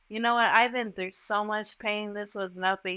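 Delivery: ordinary delivery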